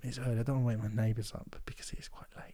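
quiet whisper. Talking late at night so as not to wake the neighbours: whispering. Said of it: "Look at me whispering".

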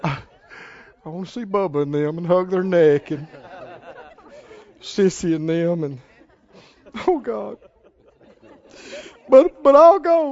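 sorrowful, very slow, very drawn out. Speaker acts out a man wanting to bid farewell to those at home, mock-sad tone. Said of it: "Can you hear a sad tone in his voice?".

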